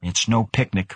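ordinary delivery

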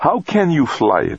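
very high, insistent, drawn-out, demanding tone. Narrator reads Stacy's question to another character, demanding. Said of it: "Stacy demanded".

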